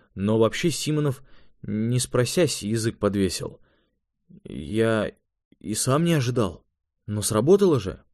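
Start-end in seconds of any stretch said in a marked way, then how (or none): none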